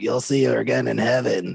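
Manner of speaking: raspy, croaky, rough, creaky character voice. Correcting the other speaker's take on Sylvia Browne: Sylvia Browne impression. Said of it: "your voice is more like".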